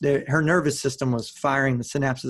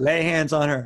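normal talking voice

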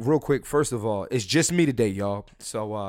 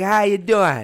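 horrible put-on West Indian accent, raised; 8 semitones higher, 7 dB louder than usual. Retelling how west indian men greet women, in a horrible west indian accent. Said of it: "that's a horrible accent".

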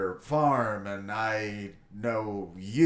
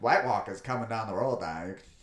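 Maine accent, delivered faster. Speaker taking an excuse to drop an accent, in a Maine accent. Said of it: "drop a fucking New Englander Maine accent".

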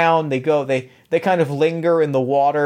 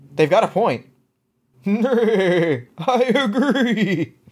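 horse voice, much higher; 6 semitones higher than usual. Telling how a knight chess piece turns to the others, horse voice. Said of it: "I like horse voices".

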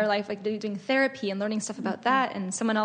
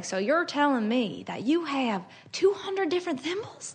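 put-on eager show-host accent, pitched up; 5 semitones higher than usual. Describing a favorite show, the speaker quotes its host interviewing a collector: imitating the host's accent. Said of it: "he has like this accent".

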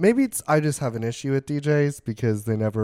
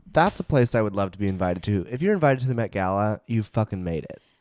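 ordinary delivery

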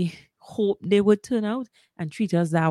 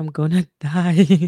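laughing while speaking, louder; 6 dB louder than usual. Remembering giving birth, laughing while speaking. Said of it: "I'm laughing".

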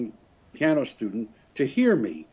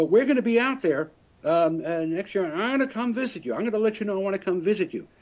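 put-on heavy Texas accent, much higher; 8 semitones higher than usual. Retelling what a fiddle-playing woman said to him, in a heavy Texas accent. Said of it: "with a very heavy Texas kind of accident".

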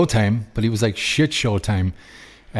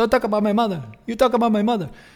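put-on Mexican accent, higher-pitched; 12 semitones higher than usual. Retelling a press conference quarrel: imitating Canelo in a Mexican accent. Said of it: "That's my Mexican accent".

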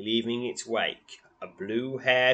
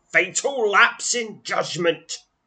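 very high, rattling, witch-like sorceress voice; 9 semitones higher, 8 dB louder than usual. Narrating the game, the speaker has the ice sorceress cry out in a rattling voice. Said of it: "cries the ice sorceress, a voice rattling".

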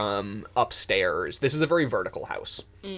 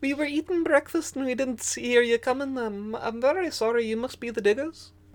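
tiny squirrel character voice, much higher; 13 semitones higher than usual. A tiny squirrel who opened the door apologizes to the diggers; small squirrel voice. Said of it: "there is a extremely small squirrel babe".

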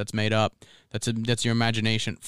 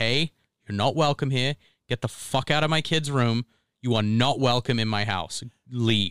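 put-on angry voice. Speaker retells ordering a ghost out of their kid's room, retelling an angry warning. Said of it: "I get like angry because I'm like".

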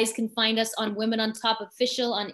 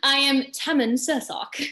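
imitated English accent; 3 semitones higher than usual. A host introduces themselves in a put-on accent, Joseph's English accent. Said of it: "I'm going to do an accent like Joseph. English".

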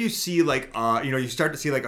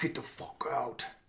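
nasty, mean, gravelly whispered voice; 12 dB quieter than usual. Describing a ghost recording heard on playback: imitating a gravelly mean voice. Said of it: "Like real gravelly mean voice".

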